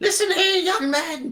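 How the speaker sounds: screeching. Voicing an invisible foe who is being attacked by adventurers: shrieking. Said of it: "She starts shrieking".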